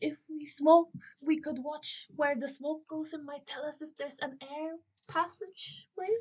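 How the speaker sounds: feeble, faint, soft, very weak voice. Telling a story, a character speaks up in a really weak voice. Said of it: "she'll say in a really weak voice".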